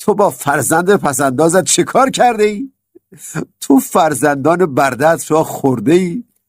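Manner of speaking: high, scornful, scoffing, mocking, laughing ridicule. Reading a story, Algamish answers the narrator's spending: mocking laugh. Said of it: "با خندهٔ تمسخرآمیزی گفت".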